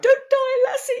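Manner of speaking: put-on very high, tearful, crying little child's wail. Retelling covering the dogs with a tissue as a child: mock crying plea. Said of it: "I'd be putting a tissue over them crying".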